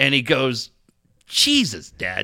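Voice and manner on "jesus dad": low, really mad, angry outburst. A father retells his son's reaction to his joke: imitating someone really mad. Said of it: "Like he was really mad".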